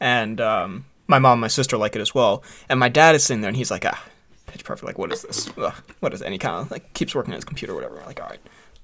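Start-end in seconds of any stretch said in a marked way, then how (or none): 3.8-6.7 put-on whispered, breathy, disparaging, dismissive scoff. Retelling how Papa Hudson disparaged a movie on TV: imitating Papa Hudson, disparaging. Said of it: "after disparaging it".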